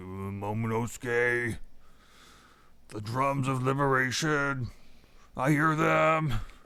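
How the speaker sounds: put-on slow, grumbly, rumbling old elephant voice. Recapping an episode, quoting the elephant Zunisha: Zunisha's old grumbly elephant voice. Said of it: "the old grumbly elephant voice".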